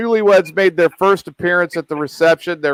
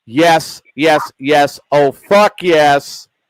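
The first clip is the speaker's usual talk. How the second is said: growing steadily louder throughout; 2 semitones lower than usual. Retelling a woman answering her wedding vows, getting louder and louder. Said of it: "starts getting louder and louder".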